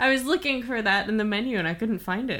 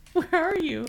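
put-on high little girl voice, calling yell; 9 semitones higher than usual. Laughing and imitating their daughter yelling: imitating daughter yelling. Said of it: "our daughter yelling".

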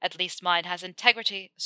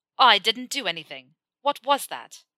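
insistent, demanding tone, louder; 2 semitones higher, 4 dB louder than usual. After a lock clicks into place, he rejects the blame and asks, demanding. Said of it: "Malfoy demanded".

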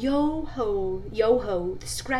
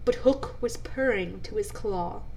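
ordinary delivery, nothing marked

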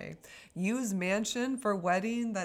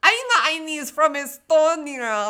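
fake drunk woman voice, higher, louder, slower; 7 semitones higher, 12 dB louder than usual. Playing a second persona introducing herself, in a put-on drunk woman voice.

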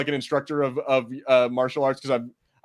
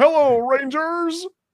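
shrill, very high, loud voice; 14 semitones higher, 6 dB louder than usual. Recalling Power Rangers characters, voicing Ninjor in a high-pitched voice. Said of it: "he's like all high pitched sounding".

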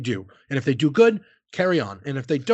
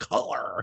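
whispered color with exaggerated hard American R; 8 semitones lower, 7 dB quieter than usual. Imitating British people doing an American accent: exaggerated American hard R in color. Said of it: "I love when British people do an American accent and put like the really hard, like".

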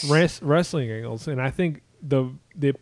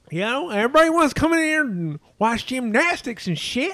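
very high, pitched-up put-on voice, cranked way up; 10 semitones higher than usual. Showing another speaker how the voice should sound, a higher Jim Cornette impression. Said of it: "your voice needs to be a little higher".

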